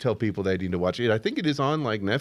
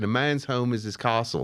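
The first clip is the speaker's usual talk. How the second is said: clumsy, bad put-on Australian accent. Describing a man fighting eminent domain near the airport: bad Australian accent. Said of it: "There's my bad Australian accent".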